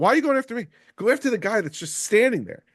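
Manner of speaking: mock, high-pitched hollered yell. Retelling yelling at another player during a match: imitating own yelling. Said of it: "I'm yelling at Tom".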